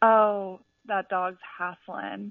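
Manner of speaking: imitated Southern accent. Retelling what a college friend would say about a panting dog: Haley's Southern accent. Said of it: "in her Southern accent".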